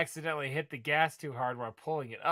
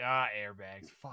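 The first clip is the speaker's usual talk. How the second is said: put-on disappointed groan, much lower and quieter; 6 semitones lower, 5 dB quieter than usual. Describing a clip, the speaker mimics a guy in it, imitating a disappointed guy. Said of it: "how fast the guy's disappointed".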